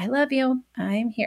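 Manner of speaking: very quiet, hushed, gentle, soft reassuring tone. Showing what to say to a child during a meltdown: saying it very quietly. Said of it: "I'll just very quietly".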